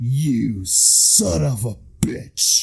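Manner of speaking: very slow, dead serious whisper.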